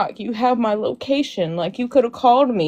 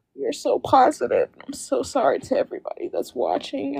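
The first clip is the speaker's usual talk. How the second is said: tearful voice, talking through tears while crying; 3 semitones higher, 4 dB quieter than usual. Apologizing to everybody watching after breaking down, crying while talking. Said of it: "I don't mean to cry".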